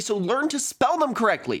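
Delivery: exasperated ranting, high-pitched.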